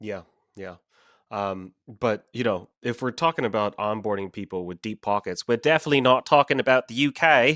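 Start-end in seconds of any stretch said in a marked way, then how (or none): 5.5-7.6 bad, pitched-up, put-on British accent. Talking about people with deep pockets in the uk, horrible british accent. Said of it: "That's a horrible British accent".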